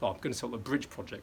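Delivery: normal talking voice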